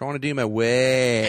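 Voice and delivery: put-on very loud Australian accent, the word "work" stretched. Repeating a movie character's line: Australian accent as Judy. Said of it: "Everyone's super Aussie in this movie".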